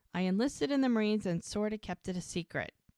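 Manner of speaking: ordinary talk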